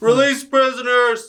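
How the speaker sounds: shrill, high-pitched yell at absolute top volume. Acting a scene on a second take after being told: yelling really loud. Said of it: "he yelled really loud".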